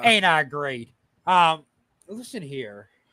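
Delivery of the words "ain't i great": put-on cocky wrestler voice, lower pitched. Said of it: "can you stop doing the Jeff Jarrett laugh?".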